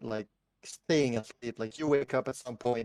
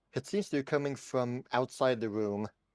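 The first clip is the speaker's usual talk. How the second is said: normal talking voice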